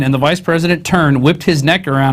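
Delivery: ordinary talk, nothing marked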